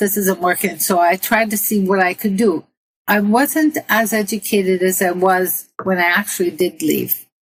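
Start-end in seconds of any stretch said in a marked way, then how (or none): none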